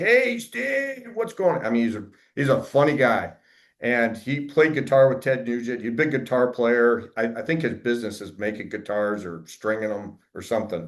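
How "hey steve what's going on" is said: California surfer-dude voice, pitched way up. Quoting a 70-year-old man who came to him, surfer-dude voice. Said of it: "The dude talked like a surfer dude".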